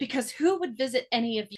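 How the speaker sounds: sly, quiet, passive-aggressive tone. Retelling Penelope's line to her sisters: imitating Penelope, passive aggressive and quiet. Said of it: "passive aggressive, but quiet".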